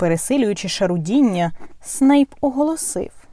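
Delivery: ordinary delivery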